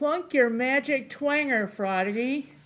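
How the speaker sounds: acted, high-pitched, stretched-out, drawn-out shouted yell. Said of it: "you had to yell".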